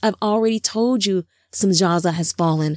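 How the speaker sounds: ordinary delivery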